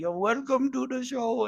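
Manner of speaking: put-on Indian accent, pitched high. Ad-libbing as a talk show host, opening the show in an indian accent. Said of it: "I could do a little Indian accent".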